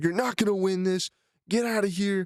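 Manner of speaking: acted, held-back coach yell. Retelling how a wrestling coach yelled at the speaker: imitating a coach yelling. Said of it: "he was just yelling so loud at me".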